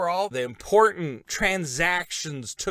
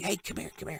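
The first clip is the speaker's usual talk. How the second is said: very quiet, breathy, barely voiced whisper; 10 dB quieter than usual. Retelling a scene at a palace fence, imitating Mordecai whispering. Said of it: "he's whispering".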